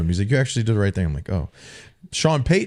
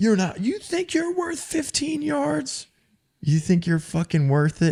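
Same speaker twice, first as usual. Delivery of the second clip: shrill, furious, high-pitched, enraged screaming. Retelling how Sean screamed at the speaker over a fifteen-yard flag, retelling Sean's screaming. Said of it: "So Sean was screaming at me".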